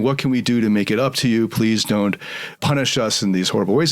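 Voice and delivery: ordinary talk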